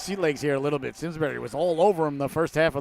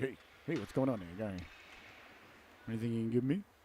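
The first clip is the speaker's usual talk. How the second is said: talking-dog character voice; 5 semitones lower, 12 dB quieter than usual. Voicing the dog on the team logo looking over: voicing the logo dog. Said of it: "That's what the dog would sound like".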